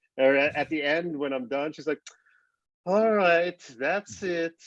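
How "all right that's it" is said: put-on female French accent, high and unhurried. Imitating a running app's French voice giving updates: imitating a French woman's voice. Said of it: "this French lady".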